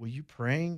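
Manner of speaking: soft, very broken non-native English. Retelling what an old lady asked him and his companions, imitating broken English. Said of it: "she said in very broken English".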